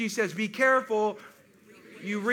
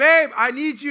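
very loud scream of pain; 4 semitones higher, 10 dB louder than usual. Retelling calling out for help while in pain, retelling a pained scream.

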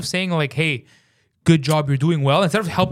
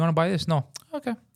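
put-on flat delivery with no emotion at all; 5 dB quieter than usual. Acting out a stoic salesman making a sale: mock emotionless stoic salesman. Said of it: "the most emotionless thing ever".

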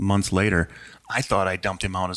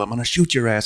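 full, loud shouted yelling; 4 semitones higher, 5 dB louder than usual. Recounting yelling a threat out the window at a man with a shotgun: retelling a yell. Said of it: "I yelled".

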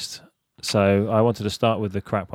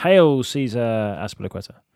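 usual speaking voice

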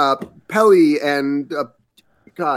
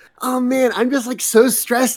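very high, super excitable, stressed gushing chatter; 9 semitones higher than usual. Adding to a voice for Isabelle: Isabelle as excitable and stressed. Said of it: "super excitable about it".

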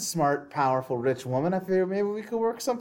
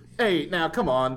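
mock, casual, unbothered pleading tone; 3 semitones lower than usual. Retelling a shot cop's reaction to the shooter: imitating an unbothered plea. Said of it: "he no-sells this gunshot more than anyone".

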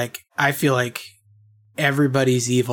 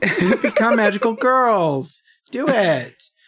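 put-on cutesy creature voice, higher pitch; 9 semitones higher than usual. Retelling what Kyubey says to the girls: cutesy Kyubey voice. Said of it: "Kyubey with his little cutesy voice".

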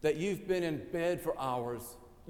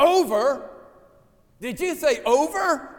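very loud, very high, slow, drawn-out yell; 10 semitones higher, 12 dB louder than usual. Retelling a movie scene where Bluto stands up: imitating Bluto yelling. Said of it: "He yells".

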